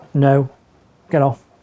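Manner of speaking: a bit stern. Showing an owner how to tell the dog to get off, a bit stern. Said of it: "that's when you do need to be a bit stern".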